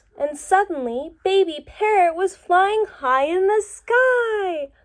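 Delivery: excited read-aloud, high, loud, "sky" stretched out. Demonstrating read-aloud expression on an exciting story sentence, excited reading voice. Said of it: "I am using my voice to indicate that that's an exciting sentence".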